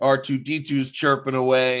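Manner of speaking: ordinary delivery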